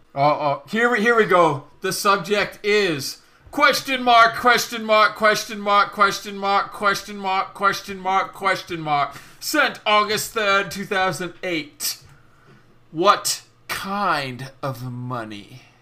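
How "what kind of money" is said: put-on low, slow English accent. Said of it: "I love how you went into an English accent".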